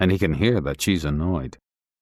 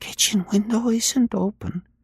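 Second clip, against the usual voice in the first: half-whispered, pitched very high. Reading a story aloud, a woman at the window at night: half-whispering. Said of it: "she whispers".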